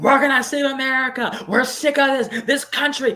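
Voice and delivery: play-acted very high, loud, shrill screaming. Retelling a voice heard screaming through a bullhorn at a rally, imitating someone screaming. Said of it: "I hear this voice just screaming like".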